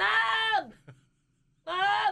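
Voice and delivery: high-pitched loud holler. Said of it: "And I'm still in a back bedroom, like".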